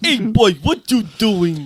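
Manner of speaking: effortful put-on Jamaican accent, high-pitched and loud. Trying out patois-style lines while others discuss the Jamaican dialect: put-on Jamaican accent. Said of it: "He's really trying to get the accents right".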